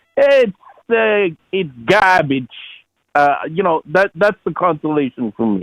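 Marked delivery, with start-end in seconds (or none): 0.2-2.5 put-on slow, thick Boston accent, laid on hard. Retelling what Jimmy says in his hardcore Boston accent. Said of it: "Jimmy say in his hardcore Boston accent".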